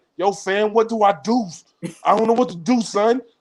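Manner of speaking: talking like a New Yorker. Retelling what a man said on the phone, in a New York accent. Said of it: "y'all know he got the New York accent".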